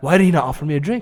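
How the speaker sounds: ordinary talk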